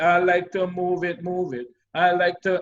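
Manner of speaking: usual speaking voice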